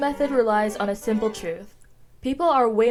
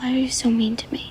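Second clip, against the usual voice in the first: put-on tearful, crying whisper. Showing how to fake tears in an argument: fake tearful whisper.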